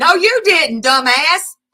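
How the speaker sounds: high, loud, angry tone.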